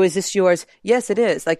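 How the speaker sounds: mock-deadpan, flat, emotionless put-on delivery. Critiquing how he throws away his lines, imitating a flat, emotionless delivery. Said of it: "he says it with absolutely, like, nothing behind it".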